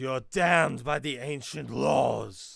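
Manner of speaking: very loud, rough battle yell in character. Voicing a character attacking the hobgoblin warlord: yelling in character.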